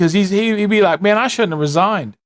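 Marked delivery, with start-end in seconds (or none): none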